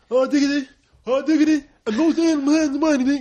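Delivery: indistinct speech. Retelling a friend's unclear catchphrase that you couldn't understand: imitating a friend's unclear speech. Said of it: "he would always go like".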